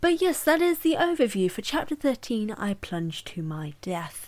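nature-documentary narrator voice. Summing up chapter 13 of a book, suddenly in a David Attenborough voice. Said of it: "I suddenly went David Attenborough with my accent".

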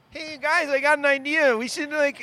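very high, drawn-out, dweeby mock nerdy voice. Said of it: "That's what you think you sound like?".

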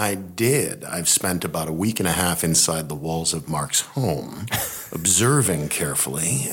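creepy podcast-style narration voice.

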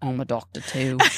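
put-on vague, light Australian accent. Imagining a scene where Xavier rolls up and greets the doctor: Xavier's accent. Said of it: "talks in his, in his accent".

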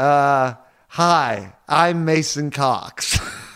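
put-on American accent. Answering another speaker, in a Mason Cox American accent. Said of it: "Just doing your best American accent".

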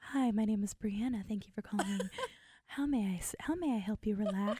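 put-on phone sex voice. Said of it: "you got your phone sex voice on again".

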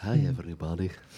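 sexy, sultry, seductive tone. Joining in on the cartoon doctor's greeting: sexy Doctor Nick voice. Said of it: "Sexy Doctor Nick".

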